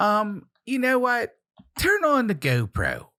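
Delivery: put-on thick, swooping, hardcore Baltimore accent. Imitating how people there talk: hardcore Baltimore accent. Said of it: "that's a real hardcore Baltimore accent".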